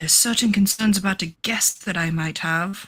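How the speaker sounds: mumbled, muttered under the breath. A character speaks aside to a companion, muttering under her breath. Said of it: "kind of muttering this to Cece under her breath".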